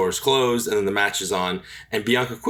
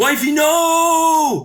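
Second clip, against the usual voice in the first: put-on yell, much higher and louder; 7 dB louder than usual. Speaker recalls friends behind them during a match, retelling friends' yelling. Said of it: "were yelling".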